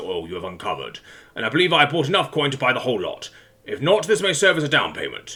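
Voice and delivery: ordinary talk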